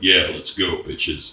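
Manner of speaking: put-on low-pitched child voice. Recalling how they talked as a child, imitating own low child voice. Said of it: "was talking like this when I was a child".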